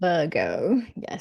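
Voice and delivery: "Virgo" said in a put-on British accent. Moving on to the Virgo reading, in a British accent. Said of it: "I don't know why I turn British sometimes".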